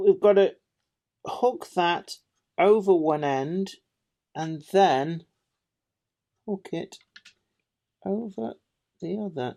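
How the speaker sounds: slowing down, halting mid-phrase, focused and concentrating. Hooking a fiddly part in place while talking: talking slower while concentrating. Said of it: "me talking slower and slower and trying to concentrate".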